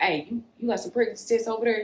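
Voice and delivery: soft, hushed, secretive voiced half-whisper. Retelling how Sim called Pre on the phone: imitating a half-whisper. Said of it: "he whispering to Pre".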